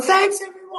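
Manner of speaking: very high, all-out full yell, acted out. Recounting getting off stage after a comedy set, retelling a yell. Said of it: "like yelling".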